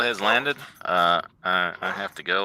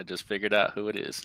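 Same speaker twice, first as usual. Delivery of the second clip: ordinary delivery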